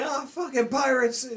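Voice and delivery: very high-pitched, panicked, terrified scream. Imitating a character who screams as if scared for his life: Usopp screaming in fear. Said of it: "he's actually screaming".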